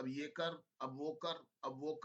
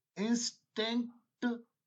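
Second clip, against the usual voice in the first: "instinct" said slowly and deliberately; 7 semitones higher, 8 dB louder than usual. Asking listeners to listen carefully, speaker says the word: slow, deliberate instinct. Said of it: "मैं धीरे धीरे बोल रहा हूं।".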